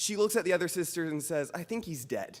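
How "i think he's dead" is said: put-on coolly calm, soft, no alarm at all. Retelling his sister's words to the other sisters, imitating an offensively calm tone. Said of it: "in like an offensively calm tone of voice".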